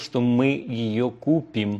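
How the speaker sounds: купим stressed and drawn out slowly.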